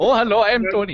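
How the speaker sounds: put-on Indian accent. Trying the impression again: Tony impersonation, Indian accent. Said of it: "It usually goes Indian Tony".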